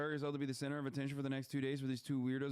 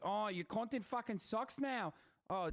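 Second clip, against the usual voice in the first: put-on Australian accent, pitched high; 8 semitones higher than usual. Mocking the kind of fan who complains about content: australian accent. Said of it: "stop doing the Australian accent".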